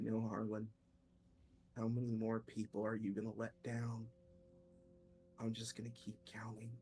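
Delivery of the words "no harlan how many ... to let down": whispering voice. Game master voicing an unseen voice behind the player's character: whispering voice. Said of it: "you hear a voice whisper behind you".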